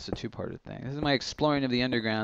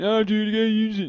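very high-pitched, urging, nudging voice; 9 semitones higher, 3 dB louder than usual. Retelling what Supersize says when he walks up: imitating Supersize. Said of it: "That's how he sounds".

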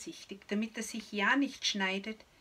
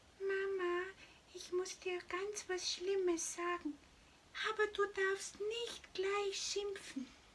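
tiny piping voice, very high and soft; 11 semitones higher, 5 dB quieter than usual. Reading a story, little Mimiki peeks in and speaks to Mama: squeaky high voice. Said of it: "piepst mit hoher Stimme".

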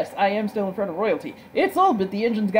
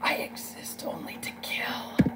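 put-on character voice, very close to microphone; 3 semitones lower, 14 dB quieter than usual. Leaning right up to the microphone to do a character voice. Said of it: "get right up close to the microphone to do this voice".

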